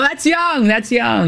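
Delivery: emphatic exclamation.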